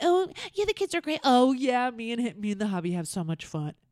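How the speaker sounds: put-on woman's voice. Mocking a woman who talks fake about her kids, in a fake put-on voice. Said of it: "Why are you talking like this fake".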